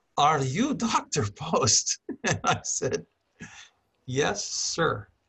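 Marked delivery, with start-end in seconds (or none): 0.2-2.0 put-on strong, loud, swooping Eastern European accent. Quoting a man who approached him asking his name, in a very Eastern European accent. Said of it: "he has a very Eastern European accent".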